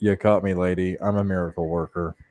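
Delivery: dry, expressionless, low, flat deadpan delivery. Voicing a character answering a lady in a game scene: deadpan. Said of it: "look at her deadpan and just go".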